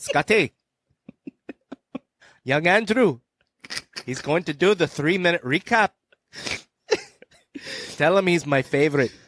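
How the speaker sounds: put-on genuine, true Scottish accent. Showing your co-host the actor's real accent, relay his message to Scotty in an Ewan impression. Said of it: "this is like a perfect impression".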